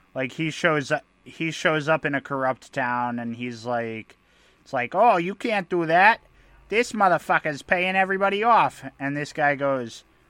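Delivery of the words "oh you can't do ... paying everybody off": put-on Boston accent. Acting out a kid who shows up in a corrupt town: Boston accent. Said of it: "so Boston was the best that I could muster".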